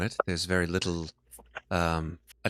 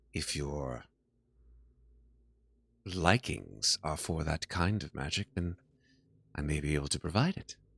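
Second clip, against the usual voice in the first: creepy, unsettling, quieter; 2 semitones lower, 4 dB quieter than usual. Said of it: "she sort of smiles in a very creepy way".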